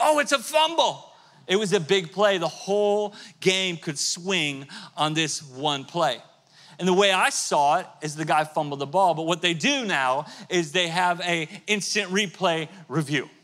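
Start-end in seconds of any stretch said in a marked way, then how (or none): 0.0-1.1 high-pitched shouting. Retelling watching a fumble on tv: imitating yelling at the tv. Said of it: "yelling at the T V".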